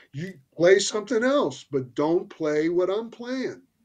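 acted-out yelling. Retelling how Larry shouted at a guitarist who kept playing timidly, retelling Larry's shout. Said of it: "shouting at him".

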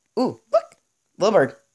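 little crack in the voice mid-line. Speaker pointing out a little bird while playing, voice cracking. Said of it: "there's a little bit of voice crack right there".

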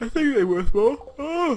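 loud, very high talking through a yawn. Speaking to listeners, yawning while talking. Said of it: "Sorry about the yawning".

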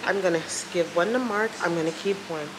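normal talking voice

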